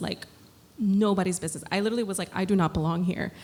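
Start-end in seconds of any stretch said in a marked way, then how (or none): none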